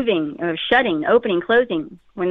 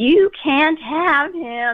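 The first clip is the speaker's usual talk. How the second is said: eerie, high, ghostly, scary voice; 6 semitones higher than usual. Speaker retells a girl's distorted face speaking inches away, imitating a scary voice. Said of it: "in the scariest voice that she could muster".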